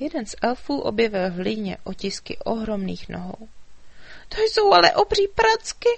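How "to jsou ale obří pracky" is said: crying out very high, shrill and loud. A narrator voices one of the elves in the story, crying out. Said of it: "vykřikl".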